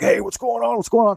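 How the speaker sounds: very high-pitched, raging, demanding outburst. Retelling how dad jumped up: imitating dad raging. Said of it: "he started raging".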